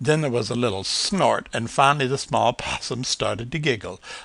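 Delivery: ordinary delivery, nothing marked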